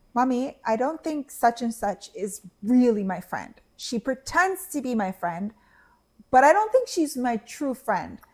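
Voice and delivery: ordinary delivery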